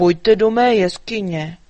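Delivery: deep, booming, loud dragon voice. Narrator reads the dragon Jáchym inviting the frightened elves: deep booming voice. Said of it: "zahuhlal hlubokým, burácivým hlasem".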